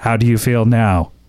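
mechanical, unnatural, machine-like robot voice. Retelling an actor's line from a play, in a robotic voice. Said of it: "he's like robotic during the entire time, not like his real voice".

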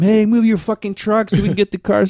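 put-on yelling. Retelling how a driver yelled at the men working with the trucks: retelling a yell. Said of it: "He starts yelling at them".

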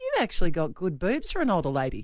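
mock matter-of-fact, deadpan teasing tone. Retelling what a teammate said to her on the dance floor: retelling a deadpan remark. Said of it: "deadpan, just going".

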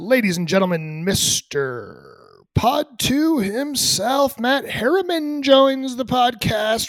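high, slow put-on podcast host announcing voice. Introducing a guest joining the podcast: put-on podcaster voice. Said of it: "We're going with the podcaster voice today".

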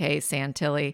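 plain

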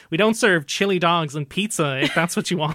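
sassy, mocking put-on American accent. Retelling a film scene where the barman answers: imitating a mocking us accent. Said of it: "mocking U S accent".

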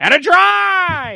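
clumsy play-by-play call, very high, very loud, drawn-out. Joking about a snowy outdoor game goal: terrible Mike Emrick impersonation. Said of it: "that's my terrible Mike Emmerich impersonation".

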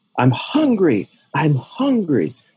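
play-acted high, drawn-out yelling, screaming cry. Telling a restaurant story, acting out a homeless man; retelling yelling and screaming. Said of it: "he yelled and screamed".

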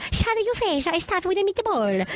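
very high put-on old Italian grandma voice. Quoting the dad's long-running family character, doing his old Italian grandma voice. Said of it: "my dad literally has like an old Italian grandma that he goes like".

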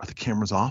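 quiet, low whisper.

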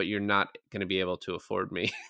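soft, hushed stage whisper under the breath. Retelling what an actor half-whispered to a producer: imitating a half-whisper. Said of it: "but then he whispers to him".

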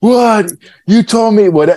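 very high, upset, shrieking scream. Speaker retells a batter screaming at his dugout, imitating a batter screaming. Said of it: "he's screaming at his dugout".

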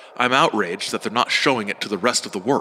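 ordinary delivery

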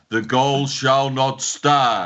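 ominous, looming broadcast announcer voice. Describing an announcement that cannot be questioned, ominous Big Brother voice. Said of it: "like a Big Brother type voice".

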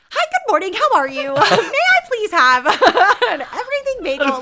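very high, very loud sing-song over-politeness. Retelling ordering a bagel at a counter in a panic: imitating own stupidest voice. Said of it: "just the stupidest voice".

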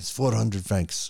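put-on French accent. Retelling a film scene, acting out the cab driver: put-on French accent. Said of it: "That's my French accent for you".

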